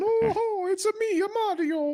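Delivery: very high, loud, slow video-game character voice. Joking about wearing a plumber hat as a Nintendo fanboy: Mario voice. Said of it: "a plumber hat and going".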